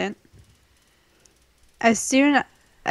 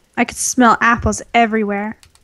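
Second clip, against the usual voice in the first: plain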